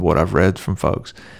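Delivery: plain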